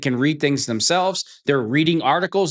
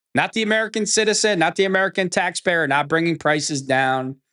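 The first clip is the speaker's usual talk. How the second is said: ordinary delivery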